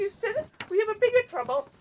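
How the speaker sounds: pitched way up, very high frog puppet voice. Goofing around before reading an article, the speaker uses a Kermit the Frog voice. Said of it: "Why are you Kermit the Frog voice?".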